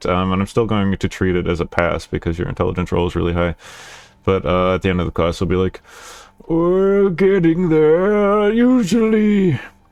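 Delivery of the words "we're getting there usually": put-on very slow, high elderly man's voice. Imitating what the teacher says at the end of class, old man voice. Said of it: "that was old man voice".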